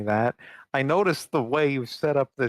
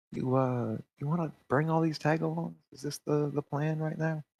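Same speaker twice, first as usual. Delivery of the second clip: soft, hushed half-whisper, put-on; 4 semitones higher, 5 dB quieter than usual. Voicing a character who gestures a player over: half-whispering in character. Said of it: "he just kinda whispers at you".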